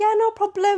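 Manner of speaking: very high, polished, posh telephone voice. Imitating a mother talking on the phone: imitating mum's phone voice. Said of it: "when she's on the phone, she's like".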